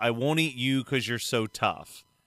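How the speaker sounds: plain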